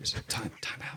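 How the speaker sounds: hushed, breathy whisper under the breath. Retelling calling a time out to the ref: imitating own whisper. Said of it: "I just whispered time out to the ref".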